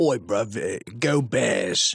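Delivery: slow, put-on Cockney accent, London style. Joking about old-school Chicago accents, saying it in a Cockney accent. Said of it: "Did you do a Cockney accent? Yeah".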